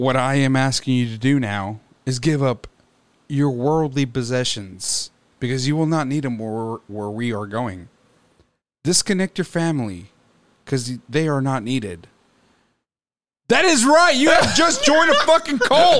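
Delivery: deep, low voice with swooping pitch. On a radio show, the host launches into a bit in a low voice. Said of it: "I'm going to talk in this low voice".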